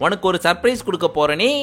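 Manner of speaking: plain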